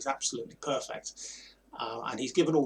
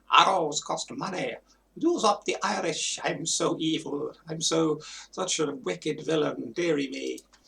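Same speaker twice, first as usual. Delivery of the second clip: put-on high, old-fashioned theatrical stage voice, every R rolled; 5 semitones higher, 3 dB louder than usual. Imitating the film villain's old-fashioned Shakespearean theatrical voice, rolling R's. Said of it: "old-fashioned, Shakespearean, theatrical voice, rolling his R's".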